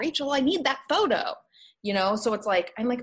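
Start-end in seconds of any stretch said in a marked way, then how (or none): 0.0-1.3 put-on scream, higher. Retelling a phone call with an upset client: imitating a client screaming. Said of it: "she starts screaming at me".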